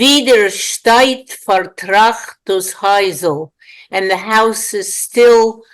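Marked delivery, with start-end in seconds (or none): 0.0-3.5 Polish-accented pronunciation. Reading a Yiddish poem line aloud before translating it: Polish accent. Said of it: "I'll try for the Polish accent".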